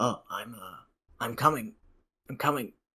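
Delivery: put-on elderly dwarven man voice, loud and calling out. Game master voicing someone answering a knock from inside, old dwarf man voice. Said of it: "an old dwarven man".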